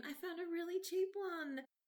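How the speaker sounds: very high, thrilled, excited voice. Pitching a plot idea where a character bought a cheap RV: imitating someone excited. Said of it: "'cause he was so excited".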